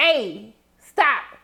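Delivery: plain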